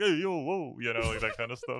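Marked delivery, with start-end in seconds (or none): 0.0-0.8 put-on unladylike New York–New Jersey accent, pitched up. Imitating a character's unladylike new york new jersey accent. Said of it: "New York, New Jersey accent".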